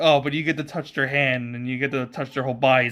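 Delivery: ordinary delivery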